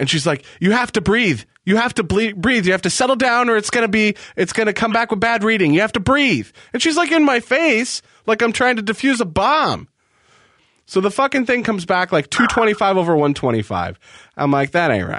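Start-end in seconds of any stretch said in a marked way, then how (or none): 0.6-6.5 mock-hollering yell, much higher pitch. Retelling a woman taking a reading, imitating her hollering. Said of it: "she starts like hollering at me".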